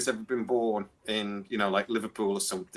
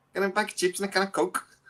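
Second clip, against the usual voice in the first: put-on Newcastle Geordie accent, pitched very high; 10 semitones higher than usual. Demonstrating a little phrase while talking about how to do accents, in a Geordie accent. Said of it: "then you can do like a Geordie accent".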